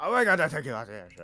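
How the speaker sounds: booming, high-pitched put-on Scottish accent. Retelling what a guy said about the airship: put-on Scottish accent. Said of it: "That's how he said it".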